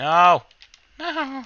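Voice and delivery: tiny squeaky mouse voice, high and swooping. Playing a game, reacting with a put-on voice: mouse impression voice. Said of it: "I need to stop doing like the, the mouse impression".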